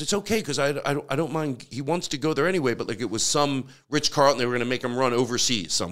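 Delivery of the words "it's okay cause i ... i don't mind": usual speaking voice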